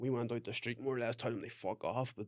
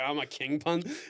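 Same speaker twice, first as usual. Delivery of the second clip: mock cocky show-off swagger, acting cool, trying too hard; 3 semitones higher, 6 dB louder than usual. Retelling how an older weed seller talked to impress them: imitating someone acting cool. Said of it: "trying to act cool".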